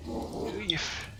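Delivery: very soft, whispered mutter under the breath.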